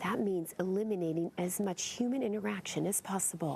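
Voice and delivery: speaking in a whisper. Standing just behind the cub's outdoor enclosure, explaining the need to stay unseen, whispering. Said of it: "The reason I'm whispering".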